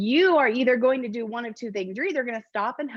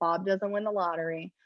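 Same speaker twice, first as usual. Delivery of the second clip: usual speaking voice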